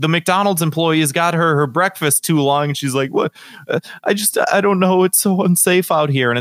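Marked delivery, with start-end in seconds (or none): 3.1-6.3 high, tearful, crying voice. Retelling a policewoman's video about slow breakfast: imitating someone crying. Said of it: "She was in tears".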